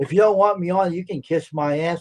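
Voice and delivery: plain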